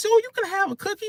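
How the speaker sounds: very high-pitched, syrupy, sugary sweet voice. Imitating her saying that a cookie is allowed: imitating a sweet tone. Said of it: "the way she said it was so sweet".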